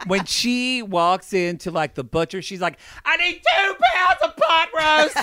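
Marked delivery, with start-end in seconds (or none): 3.0-5.2 piercing, very high-pitched, shrill yelling. Describing a reviewer ordering at the butcher, imitating Miss M444 yelling. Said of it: "She yells at everything".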